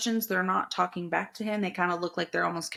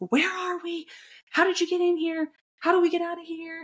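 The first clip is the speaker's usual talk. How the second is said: very high, frantic, put-on yelling; 11 semitones higher, 3 dB louder than usual. Retelling how he questioned a silent masked guy: imitating someone yelling. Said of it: "yelling at the guy".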